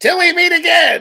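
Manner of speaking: very high, loud, awkward cartoon villain voice. Retelling how Skeletor shows up in memes: Skeletor impression. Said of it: "he's like".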